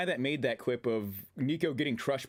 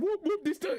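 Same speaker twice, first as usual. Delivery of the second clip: put-on Trinidadian accent, higher. Retelling what a customer in a store said: imitating a Trinidadian accent. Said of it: "the dude in his Trinidadian accent".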